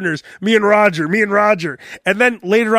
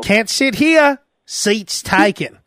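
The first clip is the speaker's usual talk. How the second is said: put-on child voice. Retelling the other speaker refusing a bus seat, imitating the Forrest Gump bus scene. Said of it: "it was like Forrest Gump when he walks on the bus".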